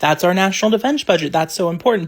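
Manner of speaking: normal talking voice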